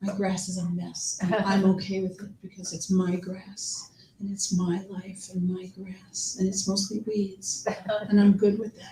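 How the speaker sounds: soft, hushed half-whisper throughout. Host between storytellers, reflecting on their own life, half-whispering. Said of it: "I don't know why I'm whispering".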